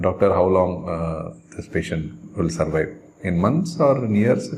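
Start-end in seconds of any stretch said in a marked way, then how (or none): none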